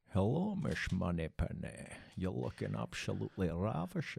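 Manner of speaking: deliberate, slow, creaky, rough film-star voice. Answering another speaker's question with a joke line: Sean Connery voice. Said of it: "Sean, Sean, uh, I'm a tennis player".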